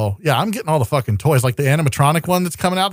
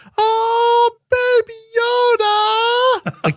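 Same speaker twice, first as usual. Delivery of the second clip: very high-pitched, long-stretched "oh". Retelling his daughter's reaction to Baby Yoda: imitating Grace's same intonation. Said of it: "Like, just like that".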